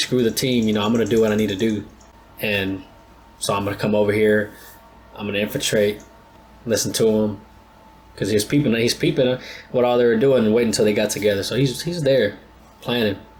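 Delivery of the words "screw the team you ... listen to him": ordinary talk, nothing marked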